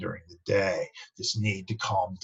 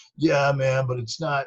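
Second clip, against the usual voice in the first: lazy, slow, pitched-up stoner drawl; 6 semitones higher, 7 dB louder than usual. Speaker imitating the argument people who do drugs make, impression of people who do drugs. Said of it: "that's my impression of people who do drugs".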